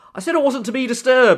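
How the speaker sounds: put-on very loud, high, full British accent. Speaker quotes a character's first line from a show, in Renslayer's British accent. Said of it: "like in a completely like completely British accent".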